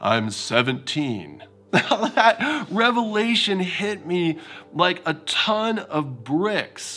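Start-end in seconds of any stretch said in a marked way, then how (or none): 0.0-1.4 low, dropped bass speaking voice. Retelling how Brian answered when asked his age, Brian's low bass voice. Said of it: "said in his low bass voice".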